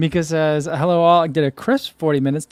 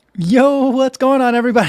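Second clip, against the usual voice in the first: loud, high voice through laughter; 8 semitones higher, 6 dB louder than usual. Opening a live broadcast, the host greets everyone: laughing while talking. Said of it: "I'm laughing because I was just staring at myself".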